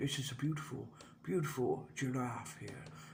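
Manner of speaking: hushed, breathy nature-documentary narration, barely above a hush. Describing a breathy voice quality with a breathy David Attenborough voice. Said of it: "the David Attenborough kind of voice, ... it's a breathy thing".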